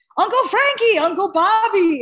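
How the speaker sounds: put-on child voice yelling.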